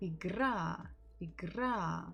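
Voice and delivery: stress on final syllable -ра of игра. Showing a learner how to say the word: stress on final A in Игра. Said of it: "The stress falls on letter А".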